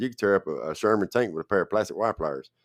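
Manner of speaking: normal talking voice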